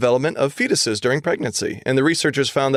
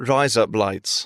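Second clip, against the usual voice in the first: put-on British accent, much lower; 4 semitones lower than usual. Sharing a fun fact about accents, say the phrase in a British accent. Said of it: "if you say "rise up lights" in a British accent".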